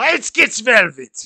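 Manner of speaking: put-on very high, very loud, angry barked German accent. Coaching another speaker on talking in german, angry-sounding german accent. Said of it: "You gotta sound angry when you talk in German".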